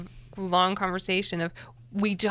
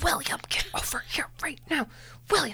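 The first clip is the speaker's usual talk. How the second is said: forceful, urgent, hushed scream-whisper; 7 semitones higher, 5 dB quieter than usual. Retelling calling a son back from a neighbor's house: imitating a scream-whisper. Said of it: "scream whispering".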